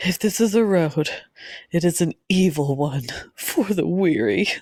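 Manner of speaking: mournful, very slow, drawn-out sorrowful reading. Showing how a quoted book line should be read: sad line reading. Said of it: "you have to say more sad".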